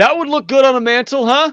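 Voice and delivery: shrill, high, loud yell. Playing a character in a game, shouting after a basilisk running away. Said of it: "I'm shouting at this as it's running away".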